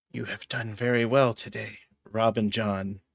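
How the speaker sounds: whispering. Playing your character, hand over a man's mouth, whispering. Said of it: "I'm going to whisper in his ear".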